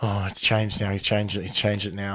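hushed muttering, half to nobody, under the breath. Retelling a crouching man in a lift: imitating someone muttering. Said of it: "he just starts muttering".

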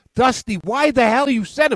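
mock, very high screaming. Retelling a reaction to a baseball play: imitating screaming at the TV. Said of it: "I was screaming at my T V".

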